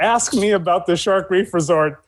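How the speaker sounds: ordinary talk, nothing marked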